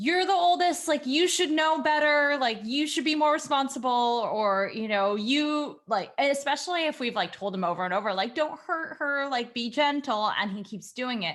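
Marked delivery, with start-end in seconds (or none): 0.0-4.3 fed-up, exasperated scolding yell. Describing how parents scold their oldest son, imitating yelling at a child. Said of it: "we start to yell things like".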